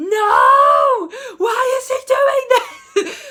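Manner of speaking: very high, very loud, stretched-out shrill scream. Retelling a friend's reaction to a book spoiler: imitating a friend screaming. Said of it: "my friend just screamed".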